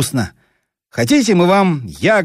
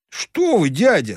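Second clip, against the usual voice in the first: gently scolding, reproachful, disapproving; 4 semitones higher than usual. Narrator voices a boy replying to a man he calls uncle, reproachful. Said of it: "укоризненно сказал черненький".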